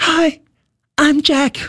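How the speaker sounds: tiny, piping, very high squeaky voice. Retelling how a performer walked past and introduced himself, imitating Jack's high squeaky voice. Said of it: "hat so eine ganz hohe Piepstimme plötzlich".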